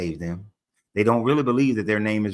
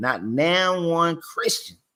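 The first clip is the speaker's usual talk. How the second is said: slow Georgia accent, pitched up; 8 semitones higher than usual. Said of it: "I mean to say it like a Georgia man would".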